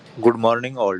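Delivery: Indian accent. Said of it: "That's not no Japanese accent".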